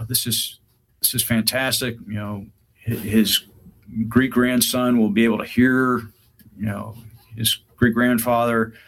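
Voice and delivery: ordinary talk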